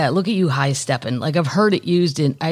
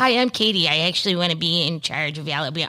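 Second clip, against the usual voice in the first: put-on Michigan-sounding accent, girl voice. Mimicking a girl who wants to be in charge of Alabama, imitating Katie's Michigan-sounding accent. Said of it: "sounds like she's from Michigan".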